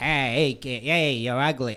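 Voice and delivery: put-on Boston accent. Asked to do a Boston accent, giving it a try. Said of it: "to do a Boston accent".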